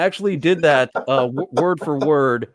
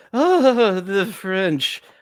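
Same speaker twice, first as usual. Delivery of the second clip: put-on drunken, pitched-up, grandly declaimed delivery; 5 semitones higher than usual. Recalling a famous wine commercial outtake: drunken Orson Welles voice. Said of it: "where he was getting shit-faced".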